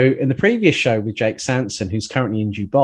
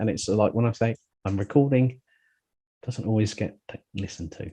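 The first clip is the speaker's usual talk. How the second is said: quiet, soft half-whisper under the breath; 7 dB quieter than usual. Explaining that family at home ignore the recording: half-whispering quietly. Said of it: "I had to whisper that one quietly".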